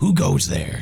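loud, menacing, intimidating, threatening shout. Calling out in character toward unknown figures in the dark: intimidating shout. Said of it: "We should intimidatingly, I'm gonna shout".

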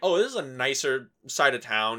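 ordinary talk, nothing marked

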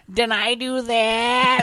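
that said high, very slow, drawn out. Showing the bit that went into: Urkel voice. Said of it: "some sort of, like, Urkel bit".

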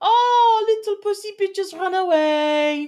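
very high, shrill, jeering and taunting shout. A tabletop player voicing their character, yelling a taunt. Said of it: "I will also yell out".

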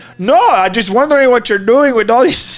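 put-on German accent. Retelling what a woman who came up behind him asked, German accent. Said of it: "do a German accent".

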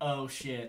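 ordinary talk

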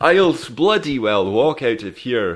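put-on Belgian accent. Retrying a quoted movie line with more Belgian in the accent; Belgian-accented MacLeod impression. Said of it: "You got to put more Belgian into it".

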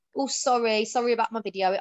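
sarcastic tone. Retelling own reply to vile inbox messages: sarcastic reply, retold. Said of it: "I'll either say something really sarcastic back".

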